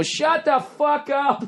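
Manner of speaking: mock very slow, very high, drawn-out jeering scream. Retelling a bar crowd heckling at comedy night: imitating a screaming crowd. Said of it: "They're screaming at you".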